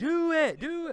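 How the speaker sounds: very high-pitched, loud, insistent yelling. Retelling how he pushed the writers to do it: imitating someone yelling. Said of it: "he'd start yelling".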